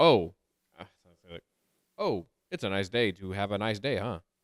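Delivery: robot-like, dead-level delivery with zero feeling. Describing something they watched, the speaker quotes one of the guys, imitating a flat emotionless voice. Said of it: "there's no emotion".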